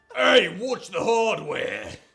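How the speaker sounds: very high, very loud, very disgruntled, grumpy voice. Voicing a character reacting to an axe slammed into the deck: very disgruntled voice. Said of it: "a very disgruntled voice saying".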